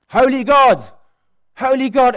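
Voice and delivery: very high, very loud, drawn-out scream. Speaker recounts bursting out in the middle of worship: retelling a scream. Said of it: "I screamed at the top of my voice".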